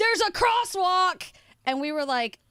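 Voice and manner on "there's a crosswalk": put-on yell, higher and louder. Retelling the cyclist's reply from his bike: imitating a cyclist yelling. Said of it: "the gentleman on the bike turned around and yelled".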